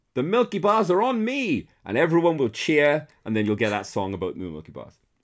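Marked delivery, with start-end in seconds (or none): 0.1-1.6 very high, belted-out shouted call. Retelling the end of an old TV advert: Milky Bar Kid shout. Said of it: "at the end he'll shout".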